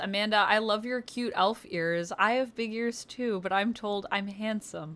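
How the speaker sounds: usual speaking voice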